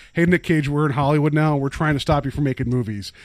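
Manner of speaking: normal talking voice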